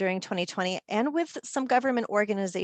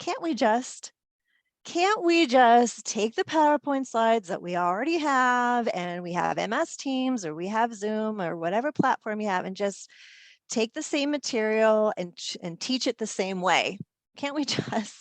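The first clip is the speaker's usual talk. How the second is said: tongue-in-cheek, facetious, sarcastic tone, acted out. Retelling a request heard about online teaching: facetious mocking imitation. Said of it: "I'm being very facetious".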